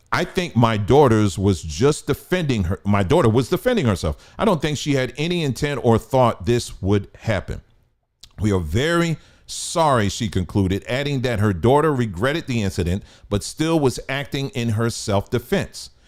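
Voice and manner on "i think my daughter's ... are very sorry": normal talking voice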